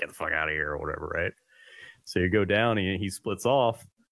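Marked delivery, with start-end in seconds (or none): 0.0-1.1 put-on angry cougar hiss, lower, quieter. Telling a cavern story, the speaker voices a cougar in the background, imitating an angry hissing cougar. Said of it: "he's all pissed off, like hissing".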